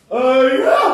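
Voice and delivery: high, loud, ingratiating wheedling voice. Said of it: "I really had to stop t-, talking like that".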